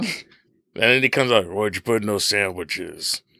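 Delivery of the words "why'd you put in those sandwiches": intense, full-intensity action-movie delivery. Retelling a movie scene where Dom steps out: intense Vin Diesel impression. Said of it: "I'm just used to intense Vin Diesel".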